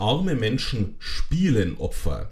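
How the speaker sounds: slow, stressed arme Menschen spielen Opfer, emphatic arme. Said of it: "Ich betone".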